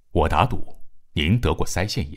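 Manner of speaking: ordinary delivery, nothing marked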